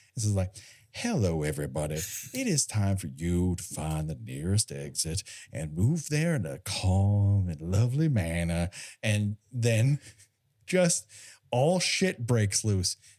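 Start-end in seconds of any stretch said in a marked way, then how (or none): 0.9-8.7 low, calm, honeyed, bourbon-smooth, stretched out. Acting out a man addressing everybody from Hub Central, use a put-on honey-and-bourbon voice. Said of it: "adding the honey to the bourbon in his voice".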